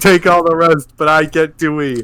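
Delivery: normal talking voice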